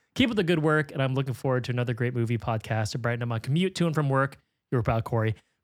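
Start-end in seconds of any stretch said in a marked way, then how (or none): none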